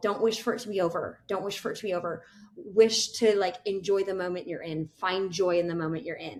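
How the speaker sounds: ordinary talk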